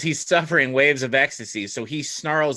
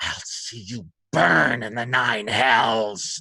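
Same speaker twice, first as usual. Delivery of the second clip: drawn-out snarling voice; 3 semitones lower than usual. Game master voicing a trapped foe's reply to a player, snarling. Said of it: "he snarls at you and says".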